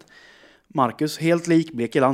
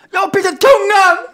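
mock-desperate distraught cry, much higher, louder; 12 dB louder than usual. Retelling a conversation with him, the speaker acts out her desperate past self. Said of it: "Jag är helt förtvivlad".

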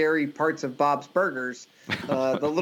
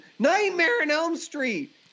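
put-on very high, shrill, piercing scream; 12 semitones higher than usual. Retelling a son screaming from the bathroom: imitating Roland screaming. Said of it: "he screams from the bathroom".

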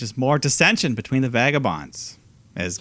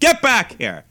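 very high, angry scolding voice; 10 semitones higher, 4 dB louder than usual. Retelling a wrestling segment where she calls the team back: imitating Zelina Vega as an angry mother. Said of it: "Like an angry mother".

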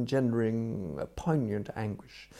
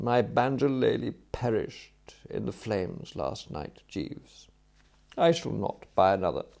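ordinary delivery

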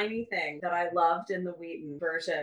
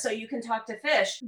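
ordinary delivery

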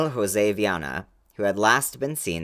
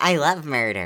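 playful, teasing, pitched-up mock voice; 6 semitones higher than usual. Teasing a co-host about how they sound on the podcast, mocking impression of co-host. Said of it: "That's a really good me impression".

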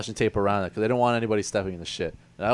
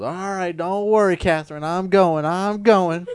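strong put-on Southern accent, much higher, slower; 10 semitones higher, 6 dB louder than usual. Imitating her director talking to her, in a big southern accent. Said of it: "her big southern accent just goes".

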